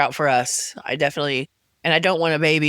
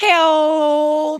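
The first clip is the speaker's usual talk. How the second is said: cat yowling impression, higher and louder; 13 semitones higher, 6 dB louder than usual. Retelling a cat's cries from the back of the car: imitating a cat crying for help. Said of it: "he sat in the back of the car going".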